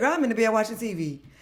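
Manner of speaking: ordinary talk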